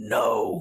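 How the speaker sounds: strange guttural voice.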